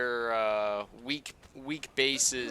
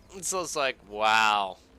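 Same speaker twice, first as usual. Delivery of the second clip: normal talking voice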